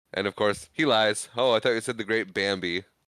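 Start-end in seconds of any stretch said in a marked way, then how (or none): none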